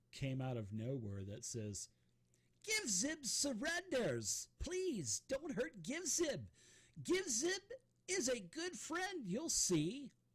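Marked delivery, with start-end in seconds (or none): 2.6-10.0 very high-pitched pleading voice. A voice comes out of nowhere in the room, high-pitched Give Zib voice. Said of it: "a high pitch voice that".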